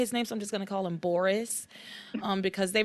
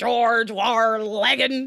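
loud put-on British accent; 8 dB louder than usual. Imitating how a character on a British show says a name: British accent. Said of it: "he says it like this".

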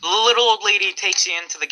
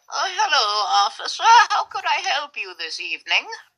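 put-on high little old lady voice; 9 semitones higher than usual. Narrator voices the gas station clerk greeting the officer: little old lady voice. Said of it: "the clerk is a little old lady".

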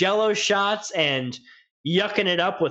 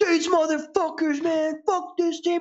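put-on, very high, drunken, hammered yell; 10 semitones higher than usual. Recounting how a hammered Tom Smith flipped out among ASU fans, imitating Tom Smith yelling. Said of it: "He's like yelling".

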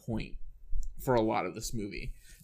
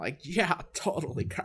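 spacey, dopey surfer dude voice, pitched up; 5 semitones higher than usual. Demonstrating another performer's character voice to co-hosts, in a dumb surfer voice. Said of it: "it's kind of like a dumb surfer".

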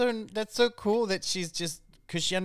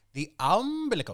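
speaking with an Icelandic accent; 2 semitones higher than usual. Helping the other speaker say a hard word: Icelandic accent. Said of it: "say it with an Icelandic accent".

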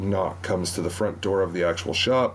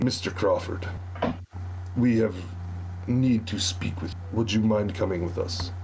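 put-on Russian soldier voice with Russian accent; 2 semitones higher than usual. Game master voicing a soldier at the door, addressing the player's character: voicing a russian soldier. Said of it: "it's very clearly a group of Russian soldiers, four in total, that you can see. All right. I'm going to open the door a crack, and I'll open it with my left hand and have a flintlock kind of hidden /".

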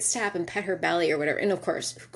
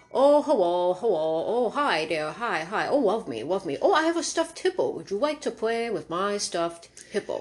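goofy, silly put-on dog voice; 2 semitones higher than usual. Describing one of the family dogs, the speaker gives him a voice: doing the dog's voice. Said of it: "He has a voice".

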